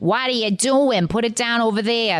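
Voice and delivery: put-on strong, heavy New York accent. Showing how an actress sounds in her movies: Debbie Mazar impression. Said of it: "if you get her in a movie, it's like".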